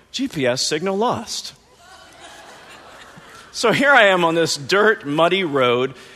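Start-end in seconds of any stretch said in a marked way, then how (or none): 0.1-1.5 pleasant, friendly automated navigation announcement voice. Retelling what the phone said on a narrow dirt road, imitating a friendly gps voice. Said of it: "this friendly voice on my phone going".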